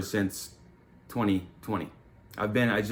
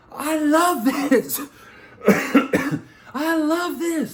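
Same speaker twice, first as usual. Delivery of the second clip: shrill, very high, slow, drawn-out yell; 6 dB louder than usual. Retelling yelling out to the sky during the first week of running: imitating own past yelling. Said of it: "I'm yelling out to the sky".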